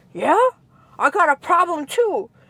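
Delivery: high-pitched, put-on angry, challenging tone. Retelling standing up to a woman, pretend angry. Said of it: "All angry".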